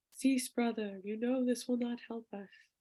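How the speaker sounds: hushed, ghostlike, ghostly voice. Narrator voices a voice inside a man's head calling out, ghostly voice. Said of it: "A ghostly voice inside his head calls out".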